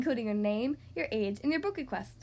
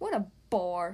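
very low, scornful, disdainful sneering; 7 semitones lower than usual. Watching monsters play a party game, she speaks, sneering. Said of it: "she sneered".

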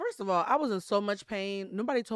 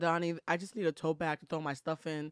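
ordinary talk, nothing marked

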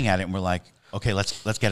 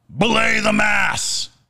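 put-on, sudden, very high, loud yell; 12 semitones higher, 5 dB louder than usual. Recounting a guest's outburst while telling a story, retelling a very loud shout. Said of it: "he just shouts very loudly".

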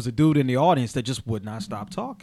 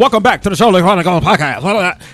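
auctioneer voice, higher and louder; 5 semitones higher, 10 dB louder than usual. Opening their podcast by mimicking another show's intro, Charlotte Chronicle podcast intro voice. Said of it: "he talks like an auctioneer".

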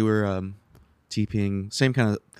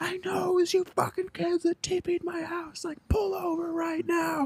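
put-on very high-pitched, drawn-out scream; 4 dB quieter than usual. Retelling how a man pulled up behind their car, imitating a man screaming. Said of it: "He's screaming out the window".

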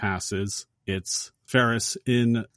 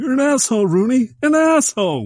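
very high, loud furious yell. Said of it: "he calls Rooney".

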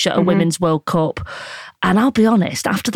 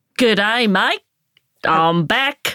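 Australian accent attempt; 2 semitones higher than usual. Back from Australia, greeting the other speaker: Australian accent. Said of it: "This is my Australian accent".

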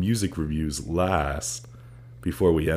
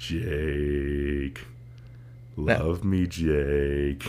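seductive, sultry, sexy voice with a drawn-out word; 3 semitones lower, 4 dB quieter than usual. Saying Jake's name to a friend, trying out a sexy voice. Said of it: "Does this sound sexy?".

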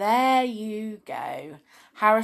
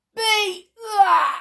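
very high, loud, strained grunt through clenched teeth; 12 semitones higher, 6 dB louder than usual. Reading the biggest ogre holding a stone slab overhead, grunted through gritted teeth. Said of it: "he grunted through gritted teeth".

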